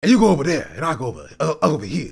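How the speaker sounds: mocking put-on gangster, mafia boss voice. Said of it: "mafia boss voice".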